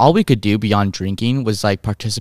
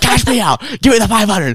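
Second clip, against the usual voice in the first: put-on acted, high, pushy, aggressive, tipsy-sounding voice; 12 semitones higher, 3 dB louder than usual. Retelling demanding their $500 winnings from the bartender, imitating an aggressive demand. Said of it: "we're getting a little aggressive now".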